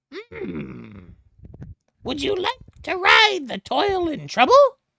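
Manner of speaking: very high, friendly, swooping goblin voice. The game master voices the friendly goblin sitting in the chair: friendly goblin voice. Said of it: "the friendly goblin sitting in the chair looks to you and he says".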